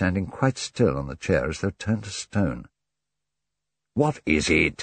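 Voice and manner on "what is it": sounding impatient. Hastings questions Poirot, who has stopped dead on a chair; impatiently. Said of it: "Hastings asked him impatiently".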